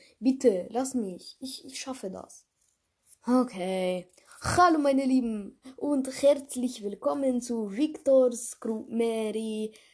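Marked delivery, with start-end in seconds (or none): 4.4-9.7 put-on Russian accent on German, "Mary" drawn out. Second try at opening the podcast, in a Russian accent. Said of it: "soll ich den einen russischen Akzent machen".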